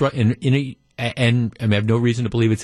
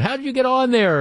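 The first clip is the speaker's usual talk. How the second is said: acted-out yell, much higher pitch; 13 semitones higher than usual. Recalling a struggling game-show contestant, retelling yelling at the TV. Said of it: "I'm yelling at the TV going".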